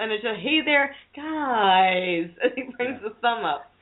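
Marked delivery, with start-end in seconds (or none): 0.4-2.3 stiff, unnatural robotic voice, drawn-out hello and guys. Describing how a man says hello in his video intro, imitating a robotic greeting. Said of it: "It's not natural".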